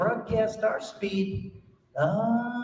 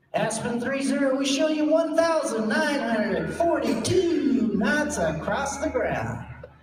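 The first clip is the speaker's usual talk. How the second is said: slightly gleeful, mock delivery; 3 semitones higher than usual. Retelling a radio exchange, the speaker imitates the controller's call: imitating Walter's gleeful voice. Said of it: "It was like a little glee in his voice".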